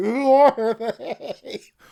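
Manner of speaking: sobbing, bawling, high, loud wailing cry. Guessing who the vocalists are, then picturing a meltdown: mock crying. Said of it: "rocking back and forth, crying, going".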